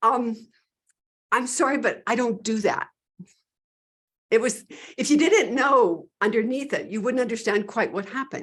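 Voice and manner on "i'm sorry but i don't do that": put-on sheepish, very slow and drawn out. Retelling how a man answered a woman begging him to heal her dog: imitating a sheepish reply. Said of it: "he just kind of like sheepishly went".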